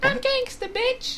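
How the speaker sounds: put-on very high girl's voice. Speaker suggests doing a girl's voice when playing the girl in-game, then demonstrates. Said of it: "you could even try to do a girl's voice".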